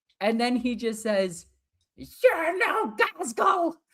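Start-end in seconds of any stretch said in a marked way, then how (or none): 2.0-3.7 shrill, very high war-cry battle scream. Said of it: "as he's screaming in the name of Gorkamork".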